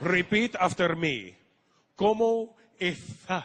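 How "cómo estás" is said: lisping Spanish pronunciation, higher and louder. Teaching someone to repeat a Spanish phrase, showing Spanish spoken with a lisp. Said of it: "they speak Spanish with a lisp over there".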